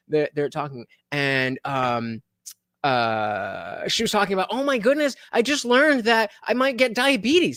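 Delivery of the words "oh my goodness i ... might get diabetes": high, clueless, airheaded ditzy voice. Retelling a couple's TikTok, imitating a girl acting stupid. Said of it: "the girl always acts, like, really stupid".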